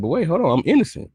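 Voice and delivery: high, protesting voice. Acting out an imagined court scene as the accused: acting out a defendant. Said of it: "I'm like".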